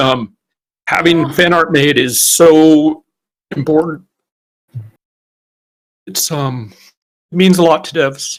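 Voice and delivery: voice thick with emotion. Answering a question about development highlights, choking up. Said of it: "I'm actually choking up over it".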